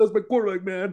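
mock choked-up, tearful sobbing voice. Retelling a football player crying after a lost playoff game: imitating Terrell Owens crying. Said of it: "Then Terrell Owens cried".

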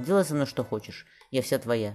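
usual speaking voice

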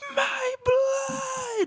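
shrill, very high-pitched shrieking scream, drawn out. Describing the anime scene where Gaara first sees his own blood, imitating Gaara screaming. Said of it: "screaming like a laser food".

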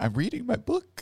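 put-on, very high childlike little-kid voice. The speaker mimics what another person said earlier, in a kid voice. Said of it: "you said it in like a kid voice".

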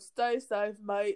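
put-on British accent on the phrase. Retelling what a man told everyone, the speaker slips into a British accent. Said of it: "I'm done with my British accent".

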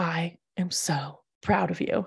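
very slow, drawn-out, leaning-in whisper. Retelling what a woman at a business dinner said: imitating a whisper. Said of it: "leaned over and she whispered".

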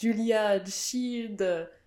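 put-on, tried-for French accent. Retell trying to get in-laws and a partner to recognize a name, using a put-on accent. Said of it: "I tried to say it like with the accent".

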